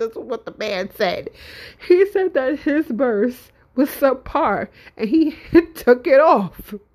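speaking through laughter. Recounting what a man said, apologizing for laughing while talking. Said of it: "I'm sorry I'm laughing".

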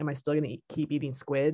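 ordinary talk

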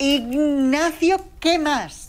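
very loud, very high, shrill, frenzied yell. A feared teacher shouts at a pupil repeating his name, beside herself. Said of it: "gritó fuera de sí".

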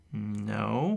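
hesitating, unsure, hesitant delivery. Asked whether he has a last name, a man answers: hesitant. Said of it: "Reuben adds hesitantly".

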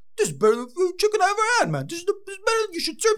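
put-on Italian accent. Praising the chicken while trying out accents for fun, Italian accent. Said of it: "that was an Italian accent".

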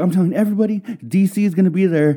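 put-on high, chipper, all-happy voice. Retelling a guy who invited someone to his party, imitating someone happy. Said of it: "He was all happy".

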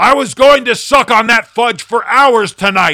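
shrill, very high roar at top volume. Narrator reading a first-person story, yelling at the one who bumped him; roaring. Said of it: "I roared".

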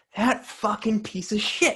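vicious, harsh cursing delivery.

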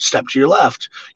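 ordinary talk

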